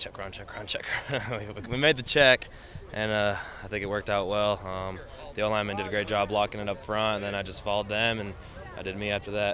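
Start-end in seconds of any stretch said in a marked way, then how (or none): 0.0-1.2 soft, hushed whisper. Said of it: "I whispered to the quarterback".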